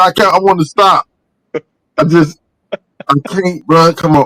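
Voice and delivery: very high, slow talk broken by laughter. Trying to stop laughing during the show: laughing while talking. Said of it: "I don't know why I keep laughing".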